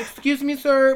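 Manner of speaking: mock nice, extra-courteous voice. Retelling people walking up saying excuse me sir, mock-polite nice voice. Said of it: "in the nice voice".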